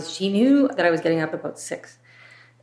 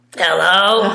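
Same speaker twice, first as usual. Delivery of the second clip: very loud, raspy whiskey-and-cigarettes smoker's voice; 8 dB louder than usual. Retelling how the caregiver answered the phone: imitating a whiskey and cigarettes voice. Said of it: "had whiskey and cigarettes voice".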